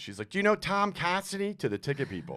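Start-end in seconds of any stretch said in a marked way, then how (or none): 0.3-1.5 acted, very high, loud call carrying across a room. Retelling the listener's mom questioning ticket staff at a club: imitating someone talking loudly. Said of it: "just being loud".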